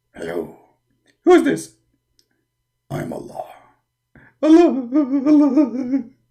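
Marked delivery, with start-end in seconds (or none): 4.4-6.0 fake crying, acted sobbing. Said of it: "Why you are crying?".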